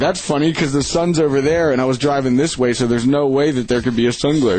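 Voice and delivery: ordinary talk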